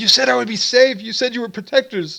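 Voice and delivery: high dragon voice with a small snarl. Voicing the dragon in the story as it speaks: slightly snarling dragon voice. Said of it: "kind of snarls a little bit and says".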